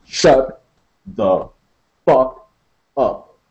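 words spaced out slowly. The narrator says it again to Maurice, with a space between each word. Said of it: "A space between each word".

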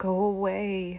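moaned, groaning. In a read story, a woman with food poisoning answers the man helping her, moaned. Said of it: "I moaned again".

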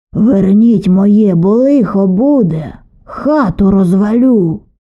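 loud, slow, drawn-out shout. A water spirit stops at the threshold and calls back into the house: shouted. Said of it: "прокричав".

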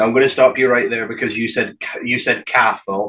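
plain

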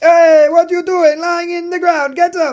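very high-pitched fake Italian accent. Narrating gameplay, voicing an Italian officer telling a soldier to get up: put-on Italian accent. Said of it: "I'm stopping the accent now".

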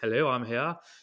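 put-on, very posh, refined upper-crust voice. Shouting for a lost phone, acting out the reply in posh Google voice. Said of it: "really posh voice".

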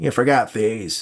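careless, heavy smoker's voice. A woman brings Nate the boxes he forgot, in a heavy smoker's voice. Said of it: "with the voice of a woman who smoked too much".

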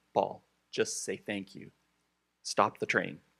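no-nonsense, firmer delivery. Showing how to tell Paul to just say thank you: saying it more firmly. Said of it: "Say to him a little more firmly".

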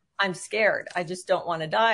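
acted-out scared crying. Recalling answering a nurse in hospital, the speaker re-enacts the reply, retelling crying, scared. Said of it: "why are you crying?".

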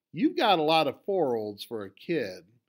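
scornful, contemptuous, sneering, sing-song taunting tone. The Red Guard leader flips through the child's stamp album, sneering. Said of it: "she sneered".

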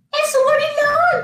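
very high, panicked, frightened shriek. Narrator reading a story, the mouse cries out as a gorilla appears: shrieking. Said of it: "Chilló la ratona".

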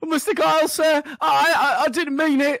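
frightened voice. Asked how Gwillip sounds terrified, a player answers in character: terrified Gwillip voice. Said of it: "What does Gwillip sound like terrified?".

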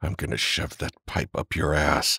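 through gritted teeth. A man with a throbbing arm threatens his attacker, through gritted teeth. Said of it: "Herron spoke through gritted teeth".

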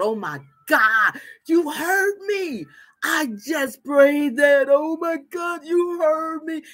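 play-acted bawling, tearful sobbing outburst of relief. Acting out a woman whose prayer was answered: imitating Sarah bawling. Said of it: "she's bawling and she's crying".

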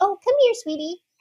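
put-on very high-pitched baby talk voice. Showing how someone talks to a scared dog, in a high-pitched baby voice. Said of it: "that baby voice, that high-pitched".

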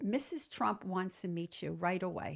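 ordinary talk

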